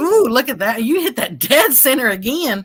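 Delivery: surprised, impressed, caught-off-guard "ooh". Watching the other player's throw land dead center again, surprised. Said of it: "Why you sound surprised?".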